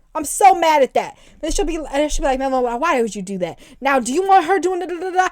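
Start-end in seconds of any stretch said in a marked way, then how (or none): 2.4-3.6 mock exhausted, weary, scolding tone. Speaker retells how she scolds him, imitating someone sounding exhausted. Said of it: "she just be sounding so exhausted".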